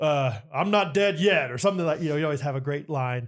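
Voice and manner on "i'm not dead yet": acted, very slow, booming, drawn-out proclamation. Quoting a character's signature rescue line, in Gilly's booming voice. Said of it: "pretty booming voice".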